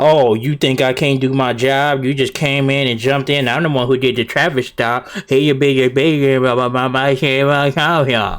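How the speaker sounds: normal talking voice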